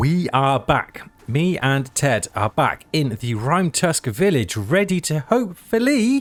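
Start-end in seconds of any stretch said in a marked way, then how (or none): 4.6-6.2 big, high squeaky voice, laid on thick. Player back in the village with a companion, saying it in a big squeaky voice. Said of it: "he says with a big squeaky voice".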